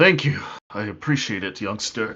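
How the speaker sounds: grudging, half-willing, reluctant tone. A narrator voicing a character who thanks a young man for healing, begrudging thanks. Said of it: "he kind of like smiles a little bit begrudgingly".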